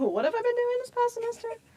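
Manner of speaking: pitch jumping up. Repeating a question back to the group, voice going high. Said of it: "Why did my voice get so high?".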